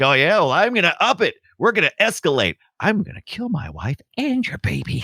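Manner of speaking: put-on high-pitched, furious, pissed-off ranting. Retelling a film scene where Zeus is defied: imitating angry Zeus. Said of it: "so pissed off".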